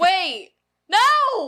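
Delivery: shrill swooping yell. Objecting when another speaker mentions a movie: yelling. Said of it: "What are you yelling for?".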